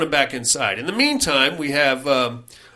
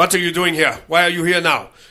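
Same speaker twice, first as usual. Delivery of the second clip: put-on German accent, earnest try; 3 semitones higher, 3 dB louder than usual. Retelling a man's question to people who ran aground; his best german accent. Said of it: "doing his best German accent".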